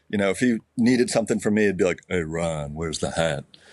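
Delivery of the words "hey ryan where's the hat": voice dropped way down, deep and barely understandable. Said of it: "[name] had crazy deep voice".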